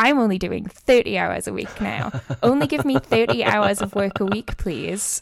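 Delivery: acted-out, very smug, self-satisfied, pleased-with-itself tone. Recalling asking the Apple store for fewer hours, the speaker is mock-smug. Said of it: "very smugly walk in and be like".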